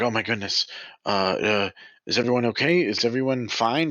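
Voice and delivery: worried fussing. A game master voices a woman hurrying toward the group on the stairs, worried. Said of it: "She's kind of got a worried look".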